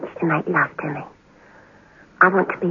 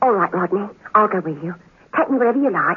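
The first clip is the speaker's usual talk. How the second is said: plain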